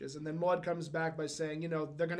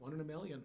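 put-on muttered aside, quieter; 8 dB quieter than usual. Retelling a scene with Walter, muttering under his breath as Walter. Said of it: "under his breath".

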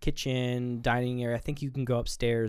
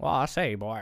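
put-on cartoon rooster voice. Doing a cartoon character's catchphrase for the other speaker: Foghorn Leghorn voice. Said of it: "Foghorn Leghorn".

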